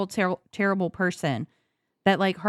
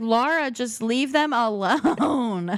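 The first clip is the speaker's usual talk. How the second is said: exasperated, drawn-out, pleading screaming; 4 semitones higher than usual. Retelling own reaction while watching the show: imitating own screaming at the TV. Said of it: "screaming at the T V half the time".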